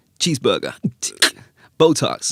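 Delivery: loud, swooping, sing-song put-on American accent. Showing the other speaker how to deliver the line, in a wannabe American accent. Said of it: "In an American accent".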